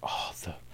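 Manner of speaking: hushed, awed, soft unvoiced whisper.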